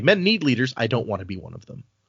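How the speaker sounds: ordinary delivery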